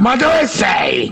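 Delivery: slow, drawn-out yell.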